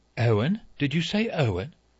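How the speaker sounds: sharp, pointed, high-pitched delivery. Emily Brent pausing over her needle to question Vera, said sharply. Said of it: "She said sharply".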